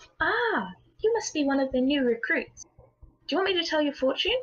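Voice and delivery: small, little, high voice. A fortune teller greets a new recruit at her door, in a small voice. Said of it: "You hear her small voice call out".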